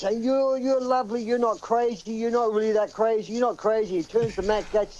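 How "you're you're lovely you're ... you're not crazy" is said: mock screaming outburst. Retelling a man who ran up to two people, imitating someone screaming. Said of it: "he's screaming".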